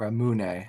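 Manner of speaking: Ramune, stressed on middle syllable mu. Learning to say a japanese soda name: stress on mu in ramune. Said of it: "The emphasis is on the mu".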